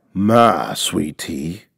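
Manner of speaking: very low, quiet, hushed mumble. A narrator reads a man's remark as he throws a bone, muttered. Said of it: "Papa Day muttered as he threw the last of the turkey bone at him".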